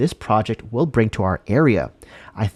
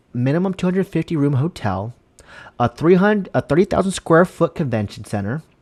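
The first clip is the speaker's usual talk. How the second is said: rushed, breakneck, very fast, pitched-up reading; 5 semitones higher than usual. Reading out convention center requirements aloud, reading very fast. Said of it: "Too fast".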